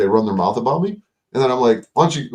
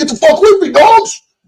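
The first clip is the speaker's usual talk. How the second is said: very high, loud barking yell; 7 dB louder than usual. Speaker imagines dogs attacking him on the street, mock yelling at dogs. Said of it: "I'd be getting loud".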